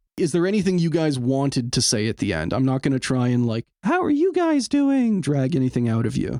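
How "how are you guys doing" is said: very high-pitched, squeaky cartoonish mouse voice. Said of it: "chime in with Mickey Mouse to ask me how I was doing".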